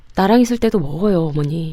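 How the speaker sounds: ordinary delivery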